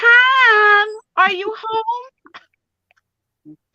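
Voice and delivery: put-on very high, drawn-out, slow New Jersey accent. Speaker retells calling to someone at home after her nap: put-on new jersey accent. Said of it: "in my lovely New Jersey voice".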